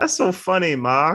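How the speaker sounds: goofy, laughing, high-pitched mockery.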